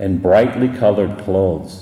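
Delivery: ordinary delivery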